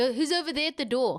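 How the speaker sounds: put-on South African accent. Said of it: "This is my South African accent".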